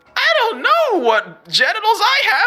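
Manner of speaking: creature character voice. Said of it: "I don't know why I sound like this now".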